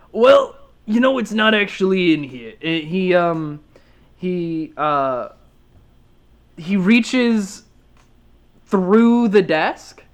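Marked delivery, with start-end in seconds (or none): 0.2-2.6 higher-pitched bugbear creature character voice. Voicing a bugbear in a shop greeting the party: bugbear character voice. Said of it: "he says".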